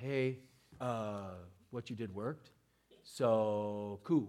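acted soft, meek, hushed sheepish voice, drawn out. Acting out how the healed man did not thank Jesus: imitating a sheepish thank-you. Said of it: "He didn't come up real sheepish like".

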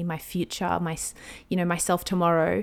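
normal talking voice

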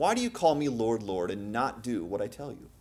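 exasperated, frustrated delivery. Repeating a quoted question of Jesus: imitating Jesus frustrated. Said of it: "Can you hear the frustration in Jesus' voice".

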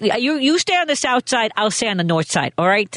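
put-on old-time Chicago gangster mob voice and accent. Imitating the characters on Boardwalk Empire, in a gangster Chicago voice. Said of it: "like this".

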